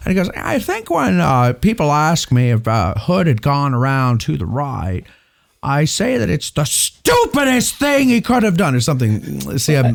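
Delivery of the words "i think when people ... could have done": folksy drawl, pitched a touch higher. Imitating how a man answers what people ask him, Jimmy Stewart-like drawl. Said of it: "I try to get voice, not just not just the uh, intonation. He's a little uh, Jimmy Stewart".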